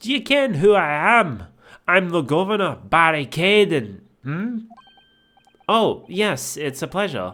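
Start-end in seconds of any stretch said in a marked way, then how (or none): 0.0-4.0 poorly imitated Scottish accent. Reading a prison governor's game dialogue aloud: bad Scottish accent. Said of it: "poorly imitating their accent".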